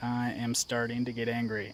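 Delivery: ordinary talk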